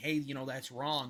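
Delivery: normal talking voice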